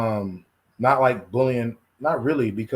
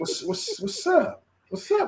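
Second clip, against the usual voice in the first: put-on voice crack, much higher; 4 dB quieter than usual. Retelling a senior getting in his face, imitating his voice cracking. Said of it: "My voice is cracking".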